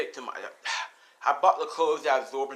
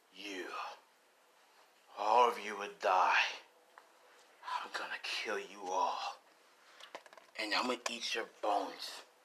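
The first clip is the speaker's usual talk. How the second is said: dark, deep, menacing dragon voice; 4 semitones lower, 7 dB quieter than usual. Voicing a dragon threatening the villains: scary, dark dragon voice. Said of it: "we can talk in the dragon's form".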